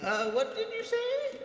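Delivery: very high-pitched, put-on elderly voice. Teasing another player about an earlier line: imitating an old person. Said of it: "You sound like an old person".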